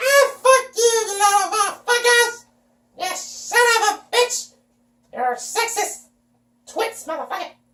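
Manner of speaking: put-on, mock squeaky voice. Speaker tells people off, doing it in a squeaky voice. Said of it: "I'll tell you like a squeaky voice".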